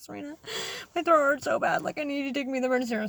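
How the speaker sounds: put-on weepy, upset, tearful crying voice. Retelling a midnight phone call asking for the emergency room: imitating her own crying. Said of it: "I was literally crying".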